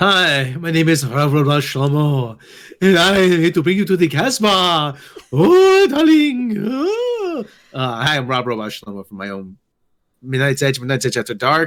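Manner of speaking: bad put-on French cartoon accent. Introducing an invented character when asked who they are, bad Pepe Le Pew impression. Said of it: "I do bad Pepe Le Pew impressions".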